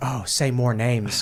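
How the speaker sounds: eager, hushed voice.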